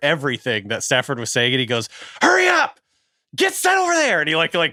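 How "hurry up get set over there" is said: put-on very high scream, projected far. Retelling a play when it was really quiet and everyone could hear him, imitating Stafford screaming. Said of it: "Stafford was like screaming at Tutu Atwell".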